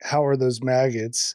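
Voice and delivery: very low, flat deadpan delivery. Retelling a movie scene where a vampire teases Michael: imitating David's deadpan delivery. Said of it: "It's just, like, deadpan".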